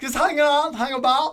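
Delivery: put-on Australian accent, loud and high-pitched. Challenged by friends to show the accent in Australian, an Australian accent. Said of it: "Let's hear it in Australian".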